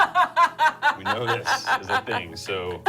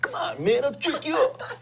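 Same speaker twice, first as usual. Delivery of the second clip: put-on Brooklyn tough-guy voice. Speaker imagining a man's words to masseurs, in a Vinnie Barbarino voice. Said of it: "in like a Vinnie Barbarino voice".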